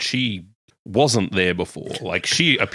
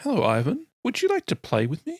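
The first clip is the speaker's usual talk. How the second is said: put-on very high small girl voice, swooping and sing-song; 13 semitones higher than usual. In a role-play scene, the girl Ona greets Ivan: small girl voice. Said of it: "you hear the voice of a small girl".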